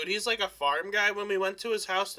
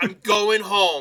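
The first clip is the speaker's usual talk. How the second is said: mock grumpy complaining, louder; 7 dB louder than usual. Imitating a coworker who gets grumpy before lunch: grumpy hungry complaining. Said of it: "almost unbearable 'cause he's like".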